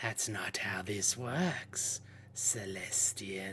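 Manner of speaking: pervasive, all-filling whispered voice. In a game scene, a mysterious voice answers celestian, a voice that permeates your brain. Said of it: "voice that just kind of permeates your brain".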